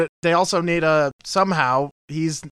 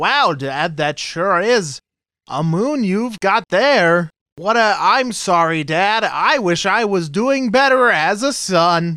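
stilted, lifeless, wooden, very slow delivery; 2 semitones higher, 3 dB louder than usual. Mocking an actor's bad performance as a son, the speaker imitates his line: flat monotone acting. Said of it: "worse than just being monotone".

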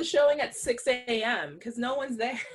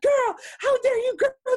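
very high, loud shrieking and screaming; 12 semitones higher, 7 dB louder than usual. Retelling a movie scene with a three-year-old: imitating Sandra Bullock's character screaming. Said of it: "just screaming at this three-year-old's face".

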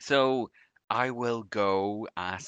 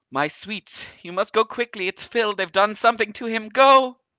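warm voice gone frantic, shrill, very high, loud; 14 semitones higher, 11 dB louder than usual. Game narrator voices a voice in the players' heads, Evandra's frantic voice. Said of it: "seems a little bit frantic right now".

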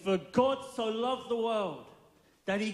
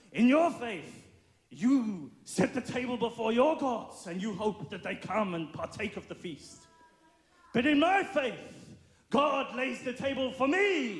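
fake German accent throughout; 3 semitones higher than usual. Retelling what a preacher said at the Crusades, in a put-on German accent. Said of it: "this is my German accent".

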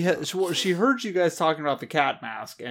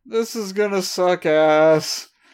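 bashful, raised, slow, with sheepishly drawn-out ending; 4 semitones higher, 7 dB louder than usual. Retelling a scene, with a sweat bead and a bashful smile: imitating Yamato, bashful. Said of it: "a really, like, bashful smile, just being like".

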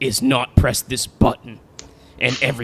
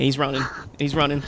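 normal talking voice

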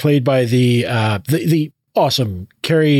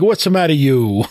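put-on Italian-accented delivery. Describing an actor's performance, quoting him in an Italian accent. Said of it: "I thought he was doing like an Italian accent".

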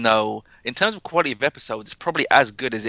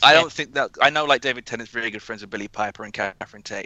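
ordinary talk

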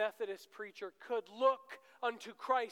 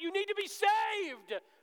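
put-on very high, loud pulpit preacher holler; 11 semitones higher, 6 dB louder than usual. Imitating a preacher yelling from the pulpit: imitating a preacher yelling. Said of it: "yelling out".

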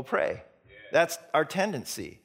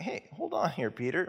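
calm, easygoing, relaxed, mellow and soft-spoken; 5 dB quieter than usual. Retelling Peter sinking in the storm as Jesus answers, imitating calm, mellow Jesus. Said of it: "Jesus is pretty calm and mellow. He's like".

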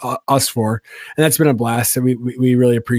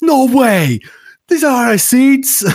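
put-on very high, loud, heaviest thick Boston accent; 13 semitones higher, 5 dB louder than usual. Retelling a dad's reaction in a video to his daughter's gift, thickest boston accent. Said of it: "Like just the most like thickest Boston accent".

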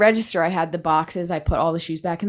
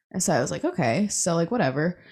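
ordinary talk

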